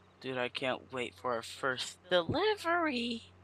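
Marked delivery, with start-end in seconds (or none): 2.1-3.2 soft voice cracking partway through. Speaker addresses a companion, voice cracking mid-sentence. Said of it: "my voice cracked".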